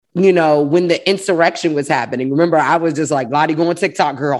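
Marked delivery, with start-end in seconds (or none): none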